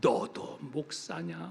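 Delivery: slow, low, creaky, scornful self-rebuke.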